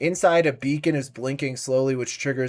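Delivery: ordinary delivery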